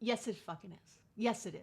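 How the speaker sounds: cheeky, sassy, insistent tone. Answering an imagined complaint about mindfulness: sassy. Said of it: "I'm swearing, getting sassy".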